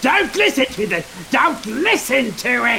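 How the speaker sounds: high, urgent, loud, wide-pitched yelling.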